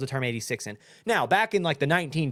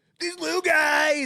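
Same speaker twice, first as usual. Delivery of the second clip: put-on yelling voice, higher; 13 semitones higher than usual. Imagining Trump playing the video game and shouting at the robots: imitating Trump yelling.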